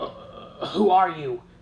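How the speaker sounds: trembling voice, shaking on each word. Confronted by a ghost in his house, a man asks, his voice trembling. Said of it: "his voice trembling".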